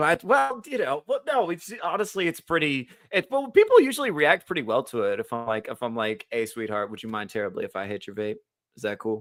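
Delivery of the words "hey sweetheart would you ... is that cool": sweet, extra-polite, super gentle, soft tone. Retelling how they ask a stranger for a vape: imitating a super gentle ask. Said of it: "super gentle like that".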